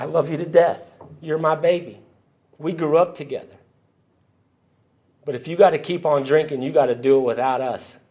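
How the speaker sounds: weepy, tearful, crying pleading voice. Retelling what his mama said to him on the phone, imitating her crying. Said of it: "She starts crying".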